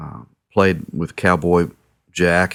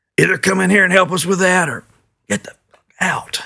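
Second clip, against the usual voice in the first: really gruff voice, pitched very high; 13 semitones higher than usual. Retelling one of the guys playing inside answering through the cracked door, gruff voice. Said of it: "this really gruff voice said".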